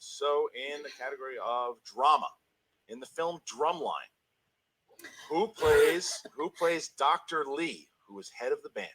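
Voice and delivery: very slow, loud, theatrical dramatic reading. Reading a quiz question aloud on request: put-on dramatic voice. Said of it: "read your best dramatic question in your best dramatic voice".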